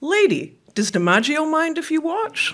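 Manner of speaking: put-on broadest, thick New York accent, very high. Retelling a wallpaper hanger's reply to the speaker's aunt, broadest New York accent. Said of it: "in the broadest of New York accents".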